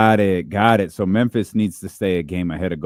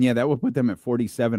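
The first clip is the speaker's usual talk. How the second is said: words breaking up with a cracked voice mid-line; 4 semitones higher, 4 dB quieter than usual. Speaker talking basketball standings with a co-host, voice cracking. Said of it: "I don't know why my voice just cracked".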